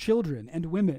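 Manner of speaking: ordinary delivery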